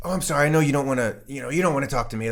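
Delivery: coy, overly nice, nice-guy politeness. Retelling how a cop approached a suspect: imitating coy, nice manner. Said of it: "coy and nice".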